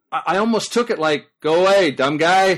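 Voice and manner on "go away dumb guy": put-on deadpan voice, louder. Retelling a knock on a locked door: imitating Mike's deadpan voice. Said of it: "Mike is so deadpan".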